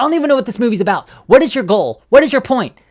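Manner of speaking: very high-pitched, shrill, loud screaming. Recalling getting lost halfway through a movie, the speaker retells screaming at the TV. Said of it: "I was just screaming at it".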